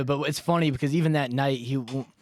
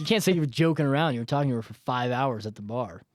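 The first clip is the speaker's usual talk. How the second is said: normal talking voice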